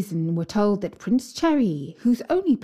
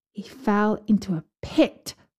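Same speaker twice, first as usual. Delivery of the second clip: ordinary delivery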